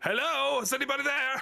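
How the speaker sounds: very high-pitched yelling, calling out. Calling out to see if anybody else is there: yelling out. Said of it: "yells out".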